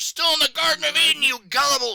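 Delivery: very high, very loud comic yell. Retelling a comic strip where a man yells after a woman: yelling in character. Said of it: "he yells behind her".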